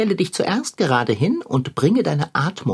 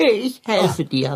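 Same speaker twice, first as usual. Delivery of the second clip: can't stop laughing while talking; 3 semitones higher than usual. In a drama, helping someone stuck get free, can't stop laughing. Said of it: "Aber aufhören zu lachen. Das kann ich nicht".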